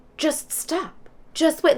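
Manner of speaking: high-pitched shouted yelling. Retelling chasing a group of people: retelling own yell. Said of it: "I'm yelling".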